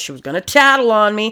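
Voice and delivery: put-on accent of the American South. Acting out a killer explaining himself, in a Southern accent. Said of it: "Why am I doing the southern accent now?".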